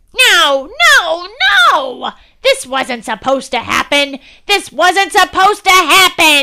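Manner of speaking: put-on high, enraged, furious yelling old woman voice. Narrator reads the old woman's line as Grabby escapes to the lake, angry shout. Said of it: "shouted the old woman, now dripping with anger".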